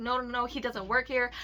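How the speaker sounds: plain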